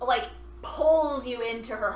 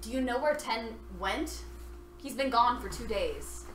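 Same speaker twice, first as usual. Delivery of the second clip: ordinary talk, nothing marked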